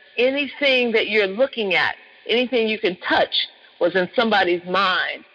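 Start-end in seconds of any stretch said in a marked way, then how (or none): none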